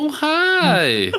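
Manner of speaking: thrilled, very high voice, stretched "hi". Imitating Tokito greeting Tanjiro: imitating Tokito super happy. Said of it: "Exactly like that".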